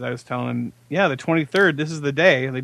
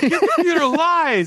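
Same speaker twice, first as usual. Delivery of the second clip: put-on tearful crying yell, much higher pitch. Retelling Malachi's reply when shown the file date; imitating Malachi crying and yelling. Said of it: "and he's like crying".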